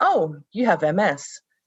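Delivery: casual, offhand, nonchalant delivery. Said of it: "very nonchalantly says".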